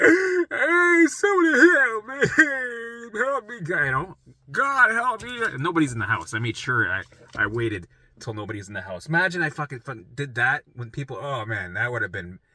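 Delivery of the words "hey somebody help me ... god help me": very slow, high sobbing scream, "me" stretched out. Retelling running down the hallway alone, imitating own past crying screams. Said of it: "crying like a bitch".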